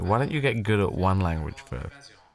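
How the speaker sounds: ordinary talk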